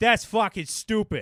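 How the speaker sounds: pronounced Boston accent, loud and very high. Showing how a phrase sounds in a Boston accent. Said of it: "a lot more pertinent in a Boston accent".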